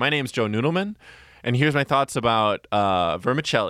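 ordinary talk, nothing marked

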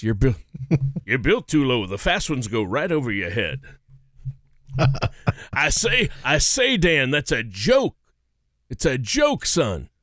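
put-on Southern cartoon rooster voice. Talking about a voice actor's many characters, the speaker does: Southern Foghorn Leghorn voice. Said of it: "that Southern Foghorn Leghorn bit".

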